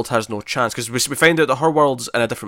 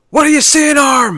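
sudden, very high-pitched, loud yelled outburst; 7 dB louder than usual. Retelling a comedy moment that cracked you up, imitating Chris O'Dowd yelling. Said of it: "Chris O'Dowd just yells out".

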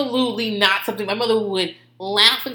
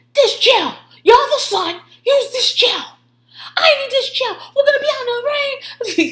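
put-on very high, frazzled, losing-it yell; 4 dB louder than usual. Telling friends about a man fussing over a product, you act out his outburst, retelling a yell. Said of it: "After he's yelling at everyone".

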